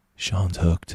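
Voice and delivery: gentle, very soft, hushed voice. Retelling what the coach said while walking away: imitating Justin's soft voice. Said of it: "in his very soft voice".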